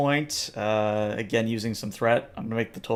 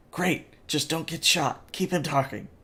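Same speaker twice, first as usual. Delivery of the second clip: whispering from the side; 5 semitones higher than usual. As a hostile creature monologues, a character speaks from the side in a whisper. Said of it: "kind of whispers".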